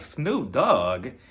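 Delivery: incredulous, disbelieving tone with rising pitch.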